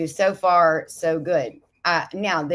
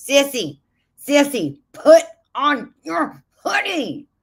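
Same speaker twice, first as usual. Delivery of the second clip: put-on scream, higher; 9 semitones higher than usual. Retelling a viewer screaming at a screen: imitating Jesse screaming. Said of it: "he's screaming".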